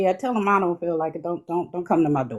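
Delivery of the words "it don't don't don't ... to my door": ordinary talk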